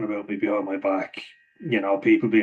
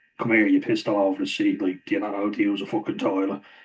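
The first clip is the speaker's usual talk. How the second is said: usual speaking voice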